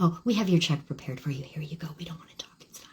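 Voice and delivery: hushed, low, soft whisper.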